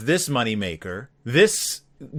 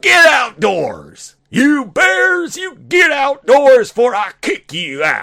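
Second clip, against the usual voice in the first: very high, throat-straining raised voice, slow and loud; 11 semitones higher, 6 dB louder than usual. Speaker ends by doing the promised voice again, throat-straining Berenstain Bears voice. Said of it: "I'd do the voice again. ... it doesn't feel good on my throat".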